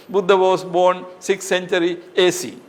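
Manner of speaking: ordinary talk, nothing marked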